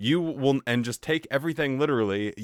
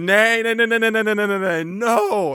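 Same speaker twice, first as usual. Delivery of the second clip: put-on giggling laughter, high and loud; 8 semitones higher, 7 dB louder than usual. Retelling her reaction when the bread was brought out: imitating someone laughing. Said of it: "she just starts laughing and laughing".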